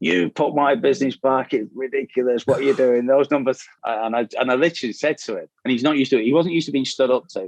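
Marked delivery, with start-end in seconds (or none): 0.0-3.6 irate, angry rant, tearing into someone. Retelling a business partner's phone call, imitating someone shouting down the phone. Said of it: "shouting down at the phone at me".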